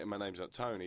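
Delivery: ordinary delivery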